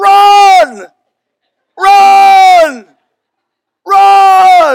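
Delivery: very loud, very high, shrill, drawn-out shout. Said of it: "And he yells".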